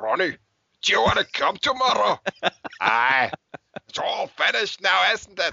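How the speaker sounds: put-on Scottish accent. Quoting a line from a movie in conversation, in a Scottish accent. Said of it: "a Scandinavian doing a Scottish accent".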